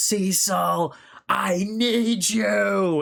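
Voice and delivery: drawn-out anguished call. Retelling Mark calling for help over a dying woman: imitating Mark screaming. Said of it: "him just screaming out".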